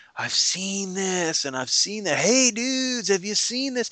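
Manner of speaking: spaced-out, stoned-sounding stoner voice. A game master reads a character as if he's on a drug trip: Axel Kranz voice, high on drugs. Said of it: "like he's on some drug trip, how he's all high".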